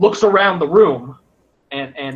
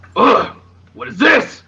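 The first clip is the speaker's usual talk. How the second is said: very gruff, rough, pitched-up character voice; 7 semitones higher than usual. Narrating a game scene where a show-off's hand flame goes out, very gruff voice. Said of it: "you hear a very gruff like".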